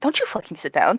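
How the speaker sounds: furious, angry voice whispered under the breath. Playing a character who glares at Edmund: glaring, angry warning. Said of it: "looks at Edmund with a glare and is just like".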